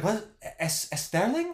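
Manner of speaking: put-on Spanish accent, stumbling on the S sound. Retelling how people tried to say the name sterling: imitating a spanish accent. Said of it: "in, like, a Spanish accent".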